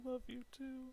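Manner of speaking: weepy, very high voice, crying through the words. Voicing characters saying goodbye to a departing friend: crying while speaking. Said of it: "they're kinda crying".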